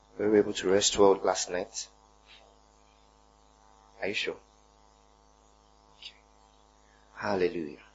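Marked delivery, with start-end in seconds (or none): none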